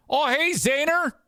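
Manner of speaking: very high, excitable fake Canadian accent. Imitating a referee who speaks with a fake canadian accent. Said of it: "they have this fake Canadian accent".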